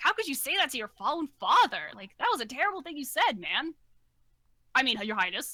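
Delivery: offended reproachful tone. A game master voices a character rebuking a player for upsetting the king: indignant scolding. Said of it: "and he's like".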